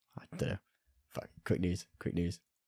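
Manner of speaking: ordinary talk, nothing marked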